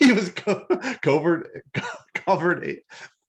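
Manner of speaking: high, giggling, laughing while stumbling over words. Trying to repeat a character's title, laughing while talking. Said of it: "I'm laughing".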